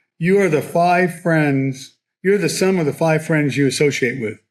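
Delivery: put-on fatherly tone, like passing on wisdom. The speaker recalls how Jim, no longer around, would say it: imitating Jim's fatherly tone. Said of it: "I can almost hear him say in a fatherly tone".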